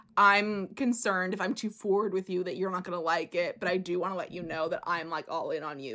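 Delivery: plain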